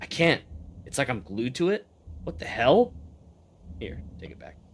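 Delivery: goblin voice muttering to itself. Game master voicing a goblin stuck to a magic item, muttering. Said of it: "He mutters".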